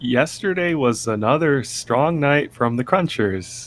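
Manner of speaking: put-on very slow, halting read-aloud like a small child. Teasing Gary about how he reads aloud, imitating Gary's kindergarten reading. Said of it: "You're reading it like you're in, like you're in kindergarten. You're like".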